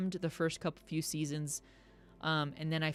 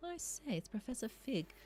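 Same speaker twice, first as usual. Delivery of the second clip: awful put-on English accent, soft and high; 7 semitones higher, 7 dB quieter than usual. Streamer reading an in-game owl post aloud, in a terrible english accent. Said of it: "I'm having a terrible English accent".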